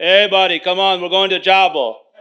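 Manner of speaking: English with a put-on Spanish accent. Acting out him going around the locker room telling people to come along, imitating his Spanish accent. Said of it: "That's his Spanish accent".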